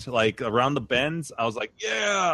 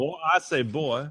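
cartoon rooster voice with southern drawl; 2 semitones higher than usual. Friends trying out American accents, one doing a Foghorn Leghorn impression. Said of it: "Foghorn, leghorn".

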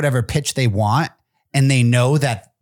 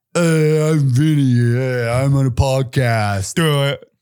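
acted dim-witted guy voice. Asked about his dumb-person impression, he gets into character: Vinny character voice. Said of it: "let me try and get into my Vinny".

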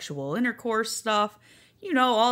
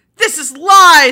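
furious, angry roar, very loud and high; 6 semitones higher, 17 dB louder than usual. Reading a story aloud, as Garfield hearing bad news: angry roar. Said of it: "roared Garfield in an angry voice".

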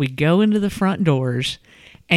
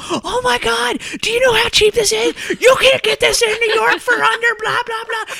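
mock shrieking, very high-pitched, shrill screaming rant. Retelling a shopper screaming at random people in the aisle: imitating someone screaming. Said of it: "just starts screaming at random people".

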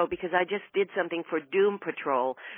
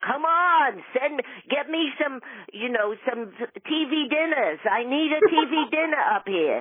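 put-on higher-pitched Brooklyn accent; 7 semitones higher than usual. Recalling an audition as an off-stage mom upstairs: Brooklyn accent. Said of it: "with a kind of a Brooklyn, you know, accent".

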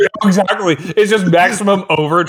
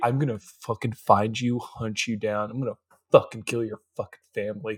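mock very quiet, hushed, dead-serious, intense delivery; 9 semitones lower, 12 dB quieter than usual. Retelling Tessa's reaction to Harden: imitating Tessa's intense threat. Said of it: "levels of intense".

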